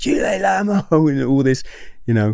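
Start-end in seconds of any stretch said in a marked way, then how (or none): 0.0-1.1 put-on screaming voice, higher. Retelling a triad screaming insults after a fleeing man: imitating someone screaming. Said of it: "he's screaming".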